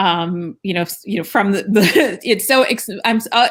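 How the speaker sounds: excited, stumbling stutter with rising pitch. Host thanking two guests at the close of the program, excited stuttering. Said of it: "I'm stuttering because I'm so excited".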